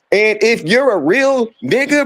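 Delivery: normal talking voice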